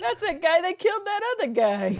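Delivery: high, fast, stunned and shocked blurt.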